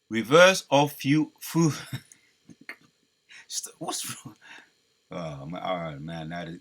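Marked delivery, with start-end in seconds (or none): 1.4-6.3 speaking while caught by giggles. Talking into a voice assistant and suddenly overcome by giggles, giggling while speaking. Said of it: "now the giggling spirit jumped on me".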